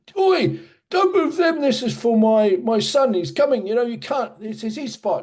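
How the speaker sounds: very high-pitched, shrill screaming. Retelling how an older english guy told young men not to move the witches' hats: imitating someone screaming. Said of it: "came running out and screaming at them and saying".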